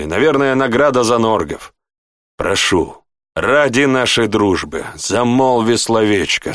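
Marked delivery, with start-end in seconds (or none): none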